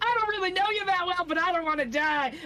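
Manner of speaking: bard voice, pleading then cheering.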